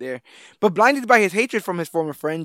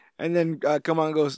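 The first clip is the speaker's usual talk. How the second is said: usual speaking voice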